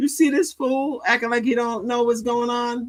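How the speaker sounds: high-pitched mocking disbelief. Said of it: "You're like".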